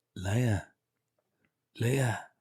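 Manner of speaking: hushed, half-whispered voice. Retelling a scene, the speaker quotes a man calling a woman's name, half-whispering. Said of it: "why are you whispering?".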